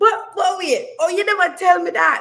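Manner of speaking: put-on very high-pitched, loud Jamaican accent. Retelling her own reply to her dad's news: Jamaican accent. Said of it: "here's my Jamaican accent coming out right now".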